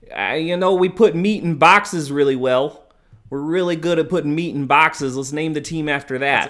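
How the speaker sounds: bad fake Chicago accent. Joking about naming a team after putting meat in boxes, bad Chicago accent. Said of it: "That's a horrible Chicago accent".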